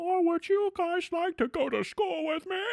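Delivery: very high, silly comic voice. Explaining why nineties comedies are funny, doing a funny Adam Sandler voice. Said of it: "he talks like this, which is a funny voice".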